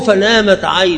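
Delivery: normal talking voice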